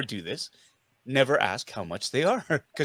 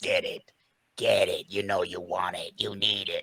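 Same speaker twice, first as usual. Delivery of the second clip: very deep, low, soft snarling coaxing voice; 10 semitones lower, 6 dB quieter than usual. Voicing the inner collector urging him to buy the toy, snarly tempting voice. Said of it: "that little snarly voice that says".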